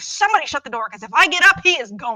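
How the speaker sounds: put-on screaming. Retelling sitting on the couch while a kid got a package: retelling a scream. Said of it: "I was screaming".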